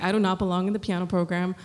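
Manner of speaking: plain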